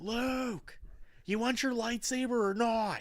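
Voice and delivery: put-on, very high, slow, drawn-out hollering. Imagining calling up the steps to Luke, pretend yelling. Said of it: "I'd start yelling".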